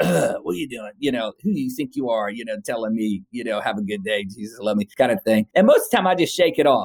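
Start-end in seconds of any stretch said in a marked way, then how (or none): 0.0-5.5 mock snarly, dismissive snarled retort. Retelling how a couple answered a passing greeting: imitating a snarl. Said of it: "snarled at me".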